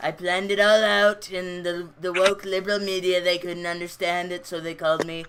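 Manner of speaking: put-on impression voice sounding like a little kid. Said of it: "Your Trump impression is so funny".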